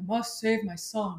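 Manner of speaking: put-on benevolent, kindly old king voice. A player picturing a nice old bearded king voices him: old benevolent king voice. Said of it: "I picture this nice old bearded man".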